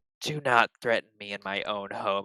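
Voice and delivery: ringing, echoing, ominous voice. Voicing a character who warns a threatening ship captain: booming, echoing voice. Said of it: "her voice just sort of, like, booms and echoes".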